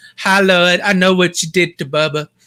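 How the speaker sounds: put-on eerie, creepy little girl voice. Planning to dress like her for Frightmare HQ, imitating the creepy little girl. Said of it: "I'm gonna dress just like her and be like".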